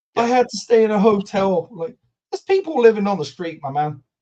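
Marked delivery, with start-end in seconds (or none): 0.2-1.7 put-on mock crying, higher and louder. Retelling a footballer's interview where he cried: imitating Antony crying. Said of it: "He cried and said".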